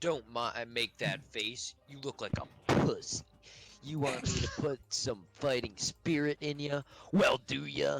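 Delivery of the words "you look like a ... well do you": put-on kid-like gamer voice, trash-talking. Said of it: "like a nine-year-old on Xbox Live".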